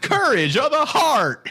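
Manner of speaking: very high, swooping character voice. Saying a movie character's line in a comedian's voice: Larry the Cable Guy voice. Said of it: "in the Larry the Cable Guy voice".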